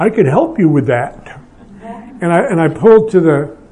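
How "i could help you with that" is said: play-acted sardonic, cynical voice. Recounting offering to help a daughter-in-law change a diaper, retelling in a cynical voice. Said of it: "in my most cynical voice".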